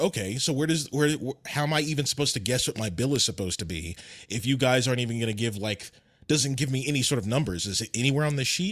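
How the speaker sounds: normal talking voice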